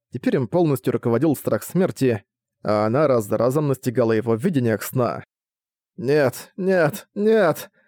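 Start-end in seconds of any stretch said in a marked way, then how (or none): 5.9-7.6 gasping, panting, much higher, slower. Narrator reads Nemuia's cry as visions of death overtake him, gasping for air. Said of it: "Грудь Немуи вздымалась. Он задыхался".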